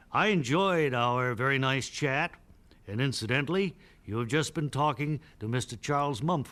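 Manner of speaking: ordinary delivery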